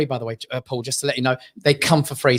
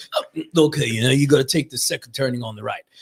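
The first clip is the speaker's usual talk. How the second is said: put-on drunken man voice. Imitating a sat nav voiced by a drunk man: imitating a drunk man. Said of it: "It was a drunk man that did the sat nav".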